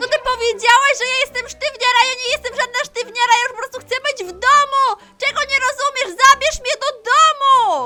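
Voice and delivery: loud shouting, yelling. Tina, called a stiff by her friends, answers them, shouting. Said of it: "ale ona krzyczy".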